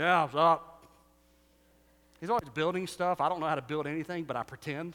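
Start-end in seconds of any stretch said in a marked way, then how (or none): 0.0-0.8 louder, lower, put-on tough manly voice. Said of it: "always lower my voice a little bit when I was around him".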